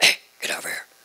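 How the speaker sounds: whispered, calling voice. Remembering a man who could only talk in a whisper, imitating a whisper. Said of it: "He talked in a whisper to me".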